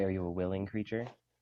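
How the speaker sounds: plain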